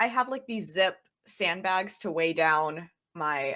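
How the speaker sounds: ordinary talk, nothing marked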